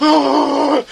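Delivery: high, loud, shocked, startled gasp.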